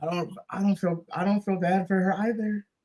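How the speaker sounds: said softly, held down. Admitting an opinion so the chat can't hear: saying it quietly. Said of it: "I'll say it quietly so the chat can't hear".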